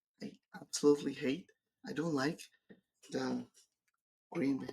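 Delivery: hushed voice. Admitting a dislike of the green banner some might resent: whispering. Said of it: "I'm, like, whispering now".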